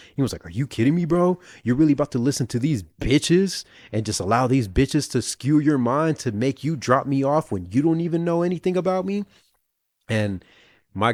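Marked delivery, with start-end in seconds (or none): 0.5-9.3 put-on angry, flipped-out ranting outburst. Retelling how a passenger flipped at the driver: imitating a man flipping out. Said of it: "the guy, like, flipped".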